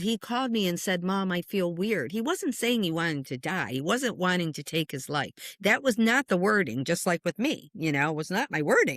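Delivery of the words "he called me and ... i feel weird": ordinary delivery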